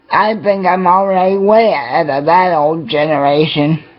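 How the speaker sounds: normal talking voice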